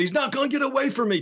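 acted out, very high-pitched, threatening wrestler scream. Retelling how Zulu walked off at the end of a promo: imitating Zulu screaming. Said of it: "he's screaming".

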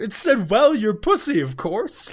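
put-on leprechaun character voice with Irish accent. Reading out a sexting message, sounding like the Lucky Charms guy. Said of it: "the way you just said that made me imagine the Lucky Charms guy".

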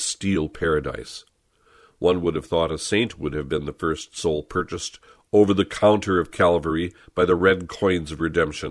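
ordinary talk

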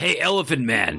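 called out high, as across a distance. Calling in character from an island to someone on shore: yelling across the water. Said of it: "I'm yelling to you from the island".

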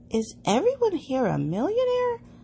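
very high, sudden, swooping blurt. Walking among grand houses with Carrie and Mary, the narrator blurted out. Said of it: "I blurted out".

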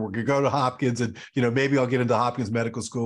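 ordinary delivery

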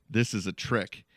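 ordinary delivery

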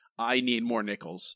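ordinary talk, nothing marked

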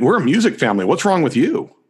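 snide, sarcastic, mocking ribbing tone. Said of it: "the sarcastic".

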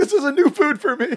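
very high voice on the verge of tears. Retelling a TV scene of eating broccoli from the stem: imitating Kevin almost crying. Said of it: "almost crying when he's doing it".

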